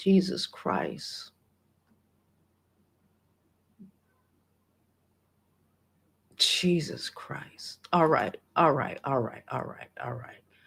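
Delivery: tearful, crying voice. Getting emotional while telling a story to the audience, crying while talking. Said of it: "Fucking crying on here".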